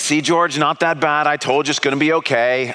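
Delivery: normal talking voice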